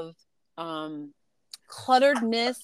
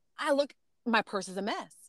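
plain

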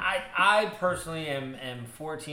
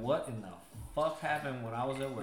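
ordinary delivery

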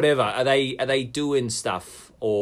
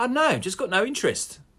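quite nonchalant, pitched high. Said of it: "quite nonchalantly".

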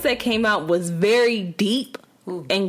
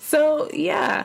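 high, nervous laughing through the words; 7 semitones higher than usual. Finishing a story about a recording, while laughing nervously. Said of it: "are you nervously laughing".

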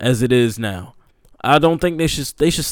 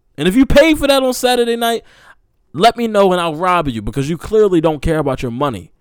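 fired-up, heated, worked-up rant, pitched up; 6 semitones higher, 4 dB louder than usual. Speaker ranting, getting heated. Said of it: "I'm getting heated now".

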